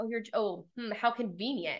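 ordinary talk, nothing marked

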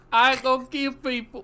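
put-on very loud, slow American accent. Mocking a film role's accent, imitating Andrew Garfield's bad American accent. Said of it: "take that bad accent and stretch it over two hours".

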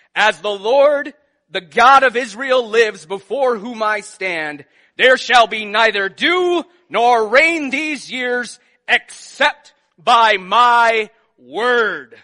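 grand, mighty, booming proclamation. Retelling Elijah confronting Ahab, speaking in a mighty voice. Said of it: "he says in a mighty voice".

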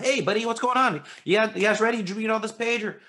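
very high-pitched, fast, breezy rushed speech. Acting out a teacher rushing kids through a page: whipping through fast. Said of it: "You're not just whipping on through going".

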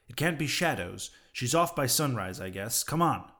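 ordinary delivery

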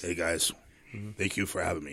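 deep voice. A guest greets the podcast hosts who just welcomed him, in a deep voice. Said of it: "The deep voice".

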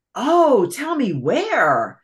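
high, anxious exclamation, very slow and drawn out. The muskrat lady responds to news about the summer vacation, exclaiming anxiously. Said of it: "Exclaimed the muskrat lady, clapping her paws, anxious like".

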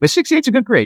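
high, eager enthusiastic voice. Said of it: "I should have sounded more enthusiastic".

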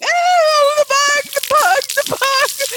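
shrill, very high-pitched screaming screech. Retelling screaming at a buzzing bug while holding a hose; retelling a scream. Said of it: "And I was just screaming".

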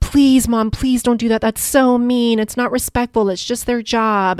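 earnest, mortified, begging plea. Retelling the daughters pleading in the back seat: imitating begging daughters. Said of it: "they're begging us".

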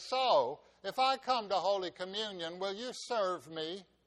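loud, play-acted, heavily sarcastic tone. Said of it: "in her most sarcastic tone".

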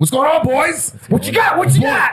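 very high-pitched speech. Imitating the other speaker greeting the boys: imitating the other speaker. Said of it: "that was an imitation of me?".

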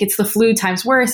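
ordinary delivery

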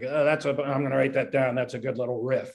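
plain

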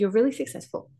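ordinary talk

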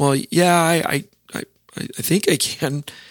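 put-on nervous tone. Recounting the answer to the wife's question about doing the counseling: retelling a nervous reply. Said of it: "I'm kind of nervously saying".

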